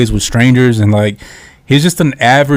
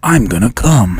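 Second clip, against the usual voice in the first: put-on dark, mysterious voice. Mocking an actor's voice: Keanu Reeves voice. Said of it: "that's what he sounds like".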